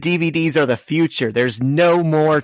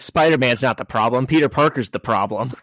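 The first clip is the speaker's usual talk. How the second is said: plain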